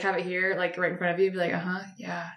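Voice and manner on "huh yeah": soft, drowsy, half-asleep mumble. Retelling a late phone call as the other falls asleep: imitating someone falling asleep. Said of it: "you'd fall asleep on the phone".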